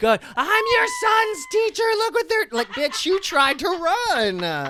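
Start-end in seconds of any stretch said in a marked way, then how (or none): 0.3-2.5 frantic shrieking scream, very high and rushed. Retelling how an elderly teacher screamed when taken out: imitating someone screaming like a maniac. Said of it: "screaming like a freaking maniac".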